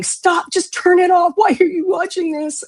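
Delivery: put-on frightened child voice, very high-pitched. Retelling watching the TV room from the staircase, imitating terrified younger self. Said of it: "being just so terrified".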